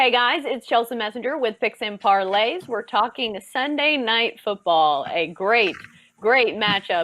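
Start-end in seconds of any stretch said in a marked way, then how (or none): 5.1-7.0 dry sarcastic tone. Introducing a football matchup to viewers: sarcastic. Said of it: "if you can hear the sarcasm in my voice".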